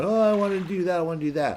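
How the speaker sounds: very high, frantic, freaked-out squeal.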